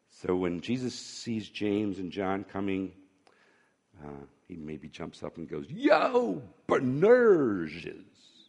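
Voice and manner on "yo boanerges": playful, goofy put-on voice, swooping high pitch. A speaker imagining Jesus calling out to James and John, in a funny voice. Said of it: "he kind of used a funny voice".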